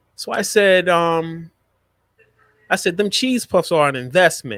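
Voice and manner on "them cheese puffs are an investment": acted tongue-in-cheek, sardonic, sarcastic tone. Retelling own sarcastic reply about giving a child cheese puffs: retelling a sarcastic remark. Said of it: "here's my sarcasm".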